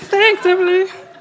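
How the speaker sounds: acted, high, piping little voice. Speaker acting out thanking her sister for bringing research: put-on high voice. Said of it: "[high voice]".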